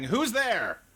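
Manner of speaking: high, loud shouting yell. Voicing robed figures who emerge from the largest building: shouting. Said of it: "and just are shouting".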